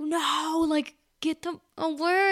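play-acted slow, yelling call. Retelling going outside after a coyote, reenacting a yell. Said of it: "I'm yelling".

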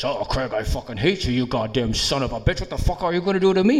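soft, nasty, hostile cursing tirade. Retelling how a coworker who disliked him talked to him at work, imitating a former coworker. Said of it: "she used to talk like this".

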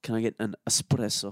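put-on Italian accent. Asked how people say it, the speaker demonstrates with a fake italian accent. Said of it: "people say espresso with like an Italian accent".

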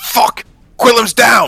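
full-throated, very loud, high-pitched yell. Voicing a character who sees an ally fall: shouting in character. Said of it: "Jack's going to shout out".

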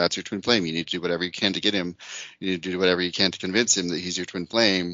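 normal talking voice

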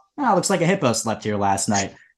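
ordinary talk, nothing marked

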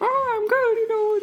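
very high and squeaky voice. Playing both sides of a chat with Mickey, answering as him: Mickey Mouse impression. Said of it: "was that accent or that impression good enough".

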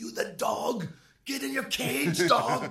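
slow, shrill, very loud, high, drawn-out screaming. Retelling how the chef screamed in the kitchen: imitating Sota screaming. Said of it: "And he would scream at me".

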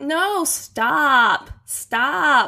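put-on, fake American accent. Joking with the others after being praised, in a put-on american accent. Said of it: "That's like my favorite American phrase".

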